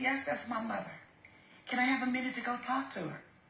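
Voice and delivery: ordinary delivery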